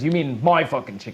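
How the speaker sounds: bickering, argumentative tone. Voicing another starving man claiming the chicken: arguing over food. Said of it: "they're arguing over the pieces of the chicken".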